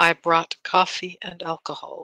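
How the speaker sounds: in-character stage half-whisper. Playing a character who half-whispers under her breath: half-whispering in character. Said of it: "I'm going to whisper".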